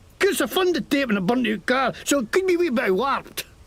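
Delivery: clumsy, bad put-on Scottish accent. Claiming a character is scottish: bad scottish accent. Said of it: "he learned his Scottish from Braveheart".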